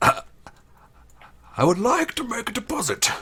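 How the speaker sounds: very high, loud, put-on disguise voice. Playing a character asking the secretary to make a deposit: disguised voice. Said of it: "disguise my voice and I go".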